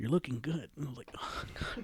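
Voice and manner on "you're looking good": botched, put-on snake character voice. Retelling what a man said to him, in an imitated snake voice. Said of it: "I'm gonna fucking butcher it, but he did it in his snake voice".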